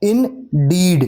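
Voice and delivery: in kept light, deed strongly stressed in indeed. Teaching stressed and unstressed syllables with a word example: stress on deed in indeed. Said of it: "डीड में हम stress कर रहे हैं, जोर दे रहे हैं, और इन में हम अनस्ट्रेस".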